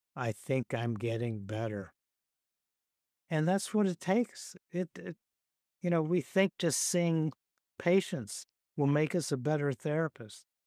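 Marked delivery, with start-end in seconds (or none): 0.2-1.9 mock deadpan, flat delivery. Quoting the world's best cellist asked why he practices, imitating someone deadpan. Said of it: "he just kind of says deadpan".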